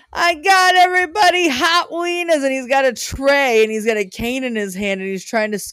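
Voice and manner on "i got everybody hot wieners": put-on male hollering, higher and louder. Retelling a movie scene of the paper's owner selling wieners: imitating a man hollering. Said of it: "he just keeps hollering about it".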